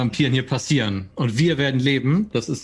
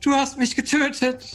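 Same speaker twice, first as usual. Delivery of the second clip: very high, heartbroken wailing scream; 12 semitones higher than usual. Facing another character and mimicking Tatjana's voice: heartbreaking scream as Tatjana. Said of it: "mime Tatjanas Stimme nach. Und schrei einfach nur herzzerreißend".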